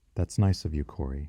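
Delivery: plain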